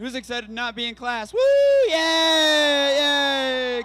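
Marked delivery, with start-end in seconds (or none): 1.3-3.8 very loud, high, swooping, extra-enthusiastic cheering. Cheering after being asked for more enthusiasm: more enthusiastic cheering. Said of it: "A little more enthusiasm".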